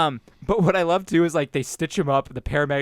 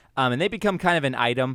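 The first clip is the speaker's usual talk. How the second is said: ordinary talk, nothing marked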